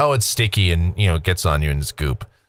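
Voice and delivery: ordinary talk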